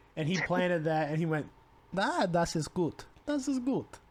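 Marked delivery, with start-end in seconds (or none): 1.9-3.8 put-on German speech, pitched up, Russian-sounding accent. Imitating a figure visiting a temple: Hitler voice that sounds Russian. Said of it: "you made it sound Russian for a second".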